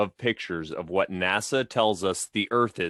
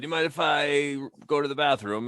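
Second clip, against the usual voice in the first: put-on drunk voice, higher-pitched; 5 semitones higher than usual. Retelling a favourite movie scene: drunk Steve Martin impression. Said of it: "When Steve Martin is hammered and he goes".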